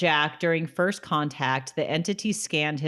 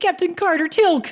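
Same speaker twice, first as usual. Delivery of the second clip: very high, rushed, run-together rattle, louder; 7 dB louder than usual. Discussing a show's funny lines, acting out Jackson's rushed line: imitating Jackson's rushed speech. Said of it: "he's like really fast".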